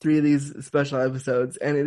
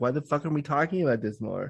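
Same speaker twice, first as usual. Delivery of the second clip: ordinary talk, nothing marked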